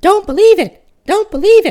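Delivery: very high, loud, ringing, clear cry. An unseen speaker cries out to a boy and a girl: high, clear voice. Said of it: "cried a high, clear voice".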